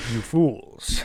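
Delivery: deep villain cat voice. Imitating a talking cat boss from the game: deep Astarion-like cat voice. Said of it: "It's this deep voice".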